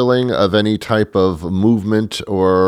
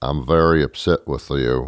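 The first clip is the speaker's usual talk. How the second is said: very low, flat, dead monotone; 7 semitones lower, 4 dB quieter than usual. Imitating an actor getting very upset, monotone Matthew McConaughey impression. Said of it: "He's very monotone. Here's my impression of Matthew McConaughey getting very upset with somebody".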